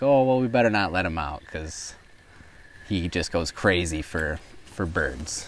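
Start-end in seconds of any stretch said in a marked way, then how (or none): none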